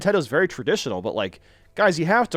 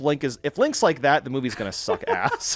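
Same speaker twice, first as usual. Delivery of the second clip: ordinary talk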